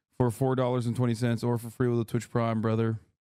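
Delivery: ordinary talk, nothing marked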